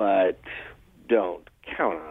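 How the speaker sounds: very serious, grave, stern, low and slow. Retelling a man's noncommittal reply, the speaker shifts into a mock-stern voice. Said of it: "turn to a very sort of stern voice and say".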